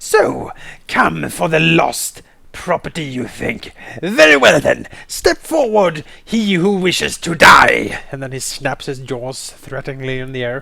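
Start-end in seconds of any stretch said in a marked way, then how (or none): 0.0-8.0 slow, rough, snarling dragon voice. Voicing a small dragon snarling at guards: snarling dragon voice. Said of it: "Tyraxus snarls at them".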